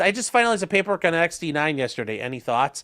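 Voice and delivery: ordinary talk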